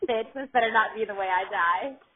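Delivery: ordinary delivery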